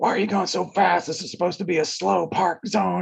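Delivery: shrill, ragged, rough screaming, very high. Retelling how a driver pulled alongside and yelled: retelling a scream. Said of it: "just starts screaming at us".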